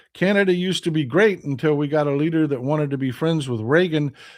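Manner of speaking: plain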